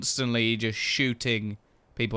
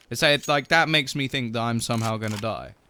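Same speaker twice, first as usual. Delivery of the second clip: ordinary talk, nothing marked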